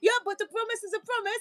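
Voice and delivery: put-on vaguely European accent, very high pitch. Retelling a video of a woman asking her ex for a promised gift: imitating a european accent. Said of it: "they had, an accent".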